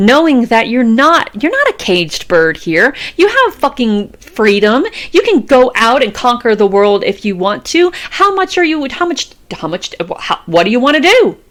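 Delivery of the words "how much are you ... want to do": pitched-up stuttering, tripping over repeated words with restarts. Giving a motivational talk to listeners, stuttering. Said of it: "I'm stuttering and stuff".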